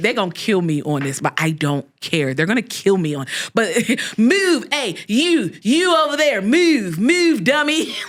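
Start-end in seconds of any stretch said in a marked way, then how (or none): 4.2-7.9 very slow, high, put-on Baltimore accent. Demonstrating a local way of talking to listeners, Baltimore accent. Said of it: "it's the Baltimore accent".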